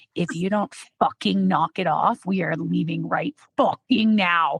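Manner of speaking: chilling, dead-serious, low, scary voice. Retelling her daughter's version of how Mom would threaten her in public, mimicking a scary quiet voice. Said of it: "in the really scary, quiet voice been like".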